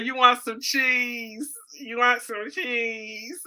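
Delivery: put-on nasal, girly voice pushed through the nose. Speaker imitating girls who sound nasally: nasal girl voice. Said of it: "she sound nasally, like like one of them girls that say".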